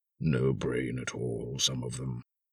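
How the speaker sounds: very low, hushed murmur under the breath. Asked if he is sure his house was here, he murmurs to himself. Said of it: "he murmured to himself".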